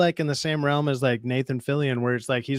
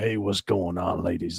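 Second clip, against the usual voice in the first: very deep, silky smooth voice; 9 semitones lower, 4 dB quieter than usual.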